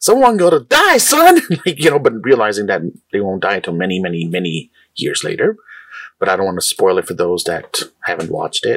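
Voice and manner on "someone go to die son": very high, stretched, drawn-out screaming. Recounting reacting to a movie fight scene: retelling own screaming. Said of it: "I started screaming like".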